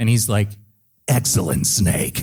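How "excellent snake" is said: put-on raspy voice. Retelling first meeting the actor playing the Colonel: imitating Paul's raspy voice. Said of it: "Back off the rasp there, buddy".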